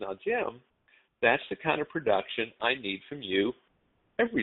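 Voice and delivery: mock friendly, courteous, polite manager voice. Retelling a manager's words after a sales day: imitating a polite smiling manager. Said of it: "really nice and polite and smile on his face".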